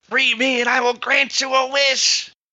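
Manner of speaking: shrill, very high screeching cry. A narrator voices a trapped old lady calling to the knights: screeching. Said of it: "she screeches out".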